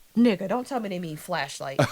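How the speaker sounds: ordinary talk, nothing marked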